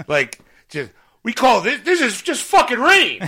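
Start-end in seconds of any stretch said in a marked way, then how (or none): 1.2-3.3 put-on angry complaining, higher and louder. Retelling a traveler getting off the plane: imitating someone bitching. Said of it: "just bitching".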